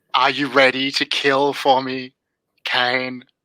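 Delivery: otherworldly, horrifying eldritch demonic voice. A master addressing its servant Kane: eldritch demonic voice. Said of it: "in this horrifying kind of eldritch demonic voice".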